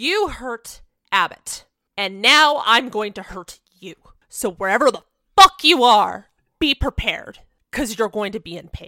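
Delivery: enraged, furious, threatening yell. Voicing a character yelling into an empty room: furious yell. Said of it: "this is a rage Abbott hasn't fully seen".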